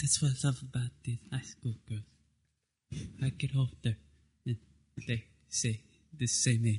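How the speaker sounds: laid-back Texan drawl. Doing an impression after a caller requests Matthew McConaughey: Matthew McConaughey impression. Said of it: "impersonating [name] doing Matthew McConaughey".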